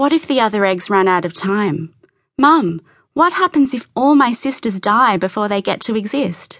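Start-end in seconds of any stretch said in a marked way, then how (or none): none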